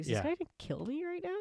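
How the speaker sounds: put-on very high-pitched, fearful, wondering tone. Retelling a scene, voicing a character who fears being killed: imitating someone scared. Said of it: "you can see she's scared".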